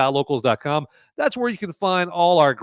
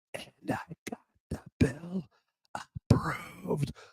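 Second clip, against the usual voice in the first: eerie, near-silent, very quiet creepy whisper; 3 semitones higher, 11 dB quieter than usual. Doing a creepy whisper impression of Biden: creepy Biden whisper. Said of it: "when Biden does his creepy whisper".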